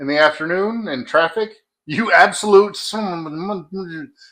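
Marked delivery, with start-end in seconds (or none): 1.9-4.1 very slow ranting outburst, curse word drawn out. Retelling own words in traffic: Yosemite Sam voice. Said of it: "I sound like Yosemite Sam sometimes".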